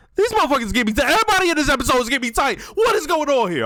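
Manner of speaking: heated, very high-pitched, worked-up venting. Reacting to an episode, getting worked up and angry. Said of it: "I'm sorry. Let me calm down".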